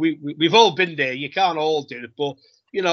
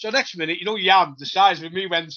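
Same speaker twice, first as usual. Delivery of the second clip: plain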